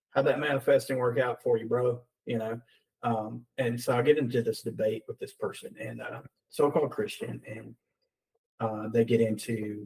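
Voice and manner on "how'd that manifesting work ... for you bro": usual speaking voice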